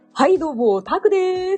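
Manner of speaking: slow, high, affected voice with syllables spaced out. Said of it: "もう一回お願いします".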